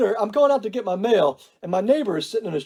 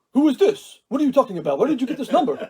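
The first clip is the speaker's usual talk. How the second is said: put-on Arabic accent in a man's voice; 2 semitones higher than usual. Retelling a phone call with a man: imitating an Arabic accent. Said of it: "he's all of a sudden Arabic".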